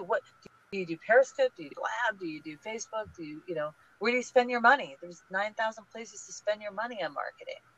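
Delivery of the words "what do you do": what followed by a pause.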